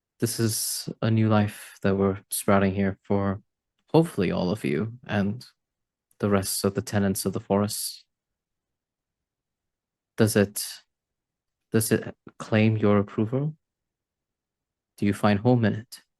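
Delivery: whispering very quietly. As Rudra, kneeling by a young sapling, whispering very quietly. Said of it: "whisper in a really quiet voice".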